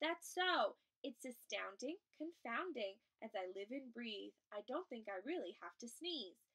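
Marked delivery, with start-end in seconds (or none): none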